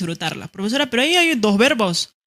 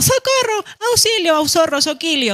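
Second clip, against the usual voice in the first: overexcited, worked-up cries with raised pitch; 8 semitones higher, 4 dB louder than usual. Explaining exclamations, the speaker shows someone very worked-up calling for help. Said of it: "Alguno muy emocionado".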